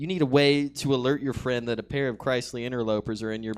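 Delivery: ordinary delivery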